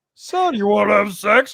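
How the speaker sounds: put-on, high, loud, hammed-up voice. Joking about reading a racy book together aloud: Pee Wee Herman voice. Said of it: "I'd be Pee Wee Herman".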